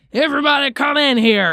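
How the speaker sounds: high, loud, barking, commanding drill-sergeant voice.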